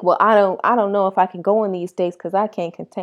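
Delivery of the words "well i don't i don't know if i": plain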